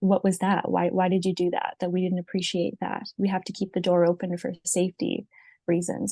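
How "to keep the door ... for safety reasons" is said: normal talking voice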